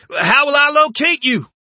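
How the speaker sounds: very high, loud, called-out shout. As two men jog off between burning wrecks, a man calls after them: shouting. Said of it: "Zeller shouted".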